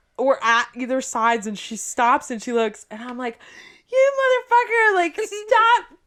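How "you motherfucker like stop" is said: put-on yell, higher and louder. Retelling yelling at a friend across a crosswalk: retelling yelling at a friend. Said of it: "she was yelling at me. I was yelling at her".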